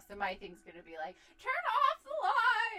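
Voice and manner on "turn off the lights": put-on stretched high grandma holler. Acting out what they'll yell to the kids about lights: imitating grandma-style yelling. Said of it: "yelling like a grandma".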